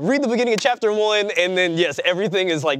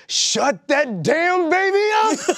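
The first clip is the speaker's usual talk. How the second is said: mock very high, very slow, rising, drawn-out yell; 10 semitones higher than usual. Retelling how a friend reacted to a screaming baby: imitating a friend yelling. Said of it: "just yells out of nowhere".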